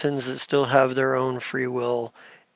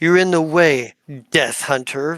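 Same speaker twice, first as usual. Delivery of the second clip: very sarcastic tone; 2 semitones higher, 5 dB louder than usual. Game master voicing a character reaching over to a player, very sarcastic. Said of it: "very sarcastically".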